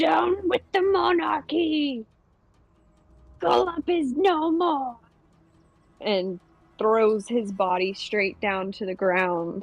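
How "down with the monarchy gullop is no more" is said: high, croaking, ribbiting frog voice. Narrator voicing Illig holding up the dead king's blade, in Illig's croaking voice. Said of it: "he ribbits out in his croaking voice".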